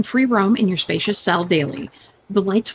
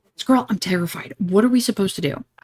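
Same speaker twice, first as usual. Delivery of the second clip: speaking in a whisper. Telling Squirrel they are in the tomb and scared: whispering. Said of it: "why are you whispering?".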